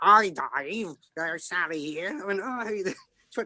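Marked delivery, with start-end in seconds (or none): 0.0-2.2 put-on very slow East End London accent, young woman. Retelling a phone call from your agent, imitating Sally's East End accent. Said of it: "She's an East End of London lassie".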